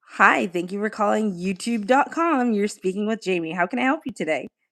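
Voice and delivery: upbeat, peppy call-centre customer-service voice. Showing how you sound taking calls at your job: peppy customer service voice. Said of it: "What does my customer service voice sound like".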